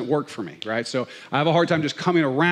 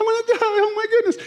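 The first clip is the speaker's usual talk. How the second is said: acted out, very high, frantic freaked-out panic; 3 dB louder than usual. Retelling the disciples in the boat as water comes in, mock panic of disciples. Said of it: "they're freaking out".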